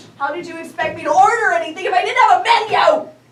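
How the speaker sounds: speaking in a loud tone. A customer speaking to the one who brought the menu, loud voice. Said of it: "in a loud tone of voice, like you're using now".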